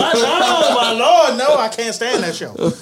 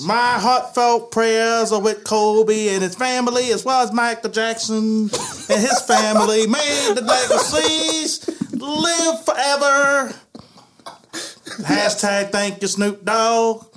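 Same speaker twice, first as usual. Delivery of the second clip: put-on old comedian's voice. Reading a tweet aloud on request, in Bill Cosby voice. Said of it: "You get the Cosby voice".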